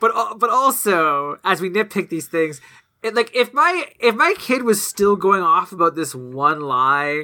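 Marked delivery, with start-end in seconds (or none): none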